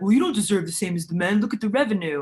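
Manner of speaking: scornful, dismissive, skeptical voice. Acting out how some people argue against equal pay: impersonating a dismissive critic.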